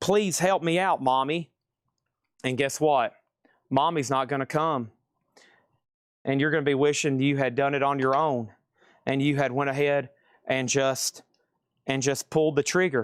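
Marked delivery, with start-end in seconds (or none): 0.0-1.5 whiny, play-acted blubbering fake crying. Imitating a buyer who missed the auction, mock crying for mommy. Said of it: "crying for their mommy later".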